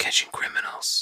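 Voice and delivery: soft whisper under the breath. Answering what else DNA can be used for, whispering. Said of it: "I don't know why I whispered that".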